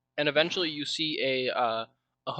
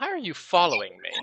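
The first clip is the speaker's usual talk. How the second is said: clearly, distinctly feminine voice; 3 semitones higher, 3 dB louder than usual. A person stopping at a door questions the one following them, in a distinctly feminine voice. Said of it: "in a distinctly feminine voice".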